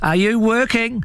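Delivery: calling out loud, shouting, very high pitch. A character must bend down to hear the reply from below, shouting. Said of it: "he shouted".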